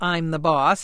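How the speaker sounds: plain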